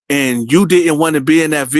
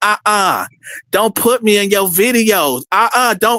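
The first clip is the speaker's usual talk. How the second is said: high, slow, feminized man's voice; 5 semitones higher than usual. Retelling what an unseen man said on a recording: imitating a feminized man's voice. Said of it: "But the voice was like".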